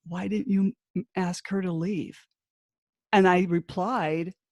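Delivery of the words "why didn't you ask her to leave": put-on meek, timid voice. Retelling what a man asked her about making someone leave: imitating a meek voice. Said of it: "he actually said in a meek voice".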